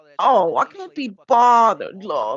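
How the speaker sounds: mock haughty superior tone. Describing how Kelly Jean talks, imitating her superior tone. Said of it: "Like I'm so much better than you".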